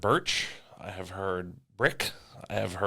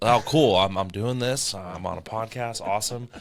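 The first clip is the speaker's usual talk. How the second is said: ordinary talk, nothing marked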